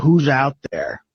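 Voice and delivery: ordinary talk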